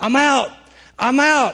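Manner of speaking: pained yelling, high and drawn out. Recounting being shot and jumping up in pain to quit, retelling a yell. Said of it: "and I'm yelling".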